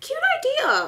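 sudden, very high-pitched little voice. Opening a package someone sent and commenting, in a high-pitched voice. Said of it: "I said that so high-pitched".

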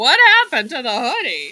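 loud, rapid, blunt, straight-to-the-point delivery. Speaker recalls how Lisa asked something; imitating Lisa. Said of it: "not that she sounds like that".

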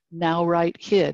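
slow, drawn-out, carefully enunciated word. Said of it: "where we would dictate".

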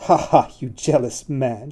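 slow, teasing, mocking banter with laughter. A woman teases her dance partner during the gavotte, laughing in mocking banter. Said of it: "she laughed in mocking banter".

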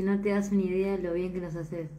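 ordinary talk, nothing marked

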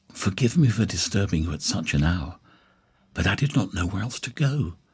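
noticeably whispered voice. A woman calling at a late hour speaks to the narrator at the door, whispering. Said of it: "she whispered".

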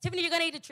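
fast, quick-fire, rattled-off motherly tone. Retelling her mother making her eat the trees, imitating mom talking real fast. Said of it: "so she talked real fast".

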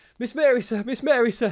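shrill, very high-pitched, loud gasping. An old butler rushes into the room, interrupting the talk; gasped. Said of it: "he gasped".

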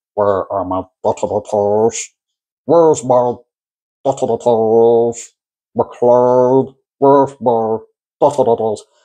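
very slow put-on film villain voice, every word drawn out. Showing off an impression the speaker calls really good: Alan Rickman impression. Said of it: "I can do a really good impression of Alan Rickman. You ready?".

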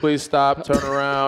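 mechanical robot announcement voice. Retelling being stopped at an airport exit: imitating a robot voice. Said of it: "like some robot guy talks to you".

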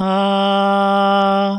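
high, loud, clean, neatly closed tone.

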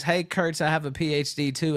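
plain

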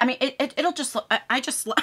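excited stuttering, stumbling over words. Going through this month's box of colours, excited stuttering. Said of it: "I'm stuttering. That's when you know I'm excited".

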